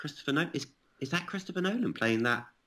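hushed half-whispered murmur. Retelling how the crew and actors reacted to the name: imitating people half-whispering. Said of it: "everyone else was sort of whispering".

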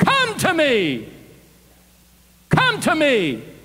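screaming giant voice. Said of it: "He screams to him".

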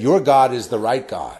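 put-on Pakistani accent. Retelling what a man said when he apologized, imitating his Pakistani accent. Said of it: "in his kind of Pakistani accent voice".

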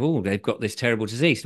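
ordinary talk

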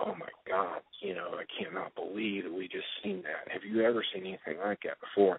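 soft, breathy, barely voiced whisper. Retelling whispering over to a cousin while watching: imitating a whisper. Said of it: "I whisper over to my cousin".

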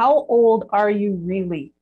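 normal talking voice

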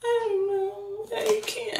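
very high, slow, weepy words through sobs. Retelling own reply to a boyfriend's apology: imitating tearful speech. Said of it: "And I start crying again".

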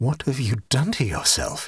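ordinary talk

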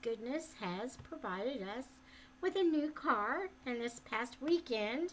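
plain

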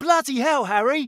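high, loud character exclamation, blurted out. Mentioning voicing a character in a game, doing Ron Weasley voice. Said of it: "I played Ron Weasley".

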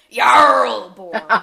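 very loud, booming, butchered pirate accent, word drawn out. A co-host says a Viking name the way they always want to: pirate voice. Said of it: "I always want to say that like a pirate".

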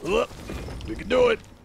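put-on high, rough pig man voice. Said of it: "I always give a pig man that kind of a voice".

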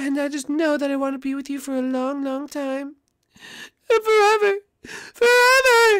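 very high voice, sobbing and crying through words. Declaring love to the bride just before the wedding: crying while talking. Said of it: "Dad, now you're crying".

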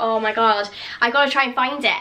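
plain

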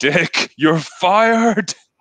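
mock shrill, very high, loud yell. Quoting a favorite movie line where the president yells: imitating a yell. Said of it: "the president just yells at him".

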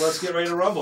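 ordinary talk, nothing marked

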